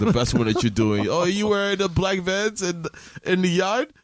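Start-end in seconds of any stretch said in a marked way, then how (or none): 1.1-3.9 fake Jamaican accent, pitched up, teasing. Showing the other speaker how to deliver the line: put-on Jamaican accent. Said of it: "your Jamaican accent".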